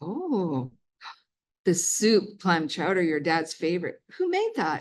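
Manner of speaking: put-on cute sing-song German accent. Quoting the speaker's mom during a family meal; cute German accent. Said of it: "but in a cute German accent".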